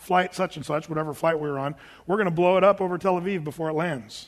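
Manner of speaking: normal talking voice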